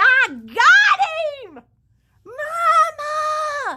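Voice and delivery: very high, very slow scream at top of lungs. Retelling winning a toy from a claw machine: imitating own past screaming. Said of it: "I was screaming at the top of my lungs".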